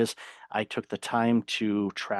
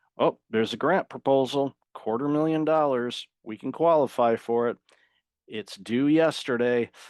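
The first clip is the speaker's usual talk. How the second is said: tongue-in-cheek, sarcastic put-on voice; 3 semitones higher than usual. Imitating a last-minute request while giving advice: sarcastic put-on quote. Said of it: "I say that sarcastically".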